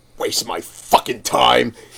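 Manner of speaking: slow, audible grumble meant to stay under breath. Telling how a man stood nearby while the speaker straightened a table, retelling a mutter under breath. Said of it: "I thought I was mumbling it under my breath".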